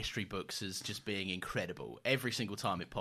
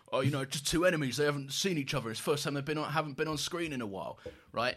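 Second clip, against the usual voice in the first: put-on high-pitched elderly man's voice; 5 semitones higher, 4 dB louder than usual. Describing two enemies meeting onscreen again, the speaker uses an old man voice. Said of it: "That's me being an old man".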